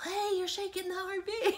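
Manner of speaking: loud high-pitched yell.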